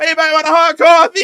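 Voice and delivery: screeching, shrill, high, full-volume yell. Describing a meme of a man spinning with a coffee pot, retelling a yell. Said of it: "And he just keeps yelling it".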